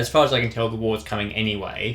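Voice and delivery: ordinary talk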